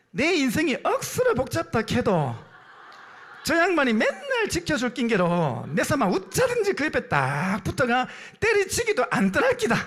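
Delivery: high, sing-song Gyeongsang accent, words swooping around. Giving regional versions of the same line, Gyeongsang dialect. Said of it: "경상도 버전입니다".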